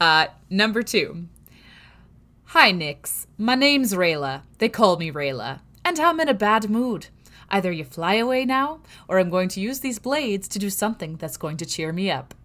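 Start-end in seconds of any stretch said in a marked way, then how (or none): 2.4-12.2 put-on loud voice in a Scottish accent. Reading numbered quotes aloud, voicing a line addressed to Nix: Rayla's Scottish accent. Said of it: "which of course I have to do in a Scottish accent".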